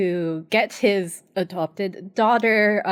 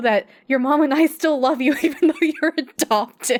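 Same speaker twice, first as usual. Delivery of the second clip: laughing through words, pitched higher; 5 semitones higher than usual. Retelling a father's line to his daughter from an episode, laughing while talking. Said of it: "I'm sorry I'm laughing".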